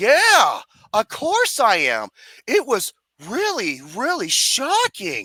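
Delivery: play-acted, stilted, wooden, very slow, swooping line reading. Retelling a movie character's line, mocking the worst acting: imitating bad wooden acting. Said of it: "some of the worst acting in the movie".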